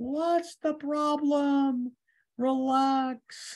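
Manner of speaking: totally calm, very slow, relax drawn out. Teaching a Torah passage, voicing God answering anxious Moshe; imitating a calm God. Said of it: "God is totally calm".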